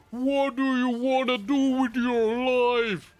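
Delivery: very weird, warped, loud, high voice, "your" stretched. Retelling a music video where the dad questions the kid, weird distorted voice. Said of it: "in a very weird, distorted voice".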